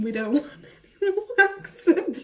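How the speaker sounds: high pleading voice, laughing throughout.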